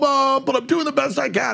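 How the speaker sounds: high whiny pleading tone.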